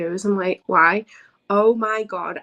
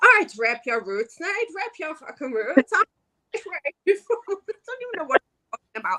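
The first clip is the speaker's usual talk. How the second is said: clumsy, bad, put-on Irish brogue; 9 semitones higher than usual. Retelling what they said to someone in a video: bad Irish accent. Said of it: "So here's me in this video going to Frankie Kazarian".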